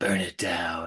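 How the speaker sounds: very soft, faint, barely there half-whisper. Retelling a movie scene where he half-whispers from the stairs: imitating a half-whisper. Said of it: "you kinda hear him whisper".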